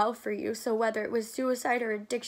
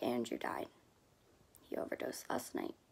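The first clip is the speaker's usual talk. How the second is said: barely whispered, voice cracking and breaking, acted; 11 semitones lower, 11 dB quieter than usual. Retelling the phone call about a friend's death: imitating Marcus's voice cracking. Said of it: "And his voice cracked".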